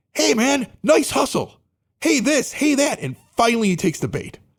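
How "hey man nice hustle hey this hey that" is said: very high, sweet-talking, friendly shout. Retelling heckling a player from the stands: retelling a friendly yell. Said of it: "we're being really nice to him".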